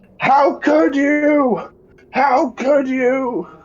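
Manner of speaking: very high, shrill, enraged, furious shriek. Voicing Korg charging the monster's corpse: in-character scream. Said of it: "he screams".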